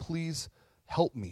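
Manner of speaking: put-on imploring, pleading, begging voice. Retelling a woman begging Jesus for help: imitating a pleading woman. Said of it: "She pleads again".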